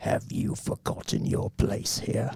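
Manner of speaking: put-on slow, hushed, breathy British accent. Voicing Bowser confronting his followers in the dark: British accent as Bowser. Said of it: "he's British".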